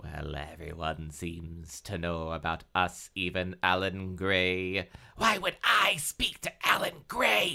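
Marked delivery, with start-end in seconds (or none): 5.2-7.6 very high, hissed, hissing tone. Christy hisses back at the narrator about Alan Gray. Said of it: "Hissed Christy".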